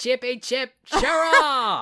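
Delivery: very high, shrill, loud fake Australian accent. Doing a requested bit for a friend: put-on australian accent. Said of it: "apologies in advance to people from the fine nation of Australia".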